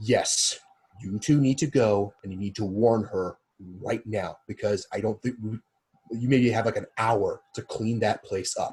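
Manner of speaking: very hushed, quiet, low voice. In a tabletop scene, a character passes a warning to two others; very hushed. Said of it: "I'm saying this very hushed".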